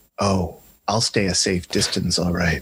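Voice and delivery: muttering under breath. Playing your character in a game after being told to keep back, muttering under your breath. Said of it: "under my breath I go".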